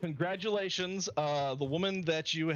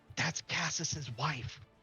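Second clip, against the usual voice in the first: whispered, leaning-in, gossipy aside; 4 dB quieter than usual. Voicing Zay, who leans in to answer a player: whispering. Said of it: "leans in and whispers".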